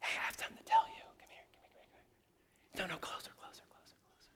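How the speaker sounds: very quiet, breathy whispered voice. Speaker demonstrates to the room how to call someone in closer: whispering. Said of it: "I'm whispering to you".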